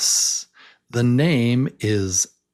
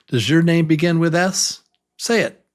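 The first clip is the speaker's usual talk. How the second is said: ordinary talk, nothing marked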